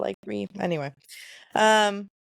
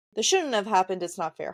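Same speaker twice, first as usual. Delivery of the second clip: ordinary talk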